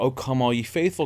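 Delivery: ordinary talk, nothing marked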